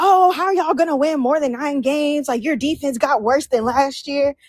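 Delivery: ordinary delivery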